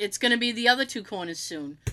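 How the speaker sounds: ordinary talk, nothing marked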